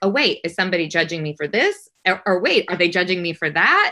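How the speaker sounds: normal talking voice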